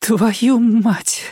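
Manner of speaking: quivering, trembling, very high voice. Kira repeats her curse, pulling off her glasses: trembling voice. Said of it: "дрожащим голосом повторила она".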